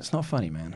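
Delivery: very quiet, hushed, hurt, wounded voice. Retelling a friend's reply to a joke: imitating a hurt voice. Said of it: "the hurt in his voice when he's like".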